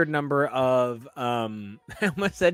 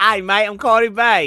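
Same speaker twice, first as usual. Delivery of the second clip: put-on Australian accent; 6 semitones higher, 8 dB louder than usual. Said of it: "just do it Australian".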